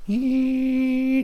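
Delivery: very high electronic machine beep.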